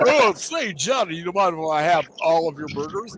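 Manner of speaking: small animal voice, in character. Joking about a friend at dinner, imitating hamster. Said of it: "that was a great fucking hamster impersonation".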